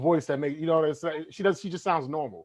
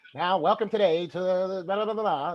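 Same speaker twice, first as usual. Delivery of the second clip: put-on fifties-style old-time radio announcer narrator voice; 3 semitones higher than usual. Describing how everyone talked back then: imitating a 1950s radio voice. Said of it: "everybody had that radio".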